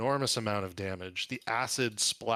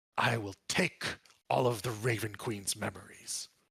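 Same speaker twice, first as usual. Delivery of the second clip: raspy, grasping voice. Game master voicing an attacker speaking to a player, raspy, grasping voice. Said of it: "says something to you in a raspy, grasping voice".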